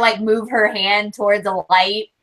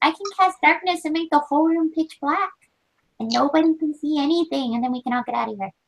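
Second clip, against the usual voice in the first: high, close, intimate half-whisper; 7 semitones higher, 3 dB quieter than usual. Player in a role-play scene speaking into her ear, half-whispering. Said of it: "I'm just whispering in her ear".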